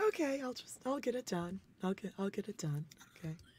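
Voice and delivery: nervous, bracing, self-steeling tone. Imitating Chanel gathering nerve for a toast: imitating Chanel psyching herself up. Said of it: "She's like".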